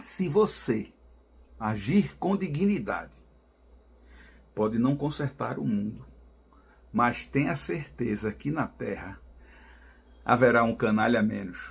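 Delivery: very slow, measured, phrase-by-phrase deliberately paused delivery. Ending the program with his usual saying, slow, with deliberate pauses. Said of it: "E vou falar pausadamente".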